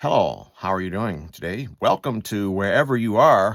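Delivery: pleasant, welcoming, recorded-announcement speaker voice. Retelling what a drive-through speaker says: imitating a pleasant recorded greeting. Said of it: "It's a very pleasant voice".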